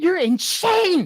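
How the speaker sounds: screamed at a very high pitch. A game narrator voicing a character shouting over the comm, screaming. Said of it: "He screams".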